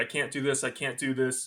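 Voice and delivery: plain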